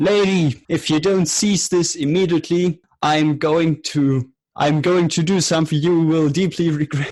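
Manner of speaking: slow, high-pitched, drawn-out calling voice. Playing a character banging on a door: in-character shout. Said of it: "bang on the door and shout".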